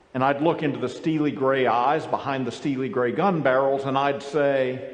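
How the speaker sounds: ordinary delivery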